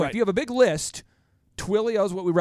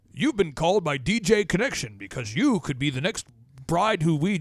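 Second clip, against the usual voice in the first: put-on automated radio announcer voice. Imitating an automated voicemail ad, in a radio announcer voice. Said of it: "it'd be more like more like a Ron radio voice".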